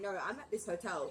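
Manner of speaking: ordinary talk, nothing marked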